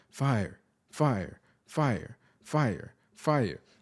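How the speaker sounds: very slow, mechanical, repetitive robot voice. Describing a fire alarm's third level, the speaker imitates it: robot voice. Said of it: "it's like a robot voice".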